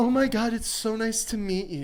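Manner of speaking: put-on woman's voice. Retelling how a woman greeted someone: imitating Sosha. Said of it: "she comes up to Sean like this".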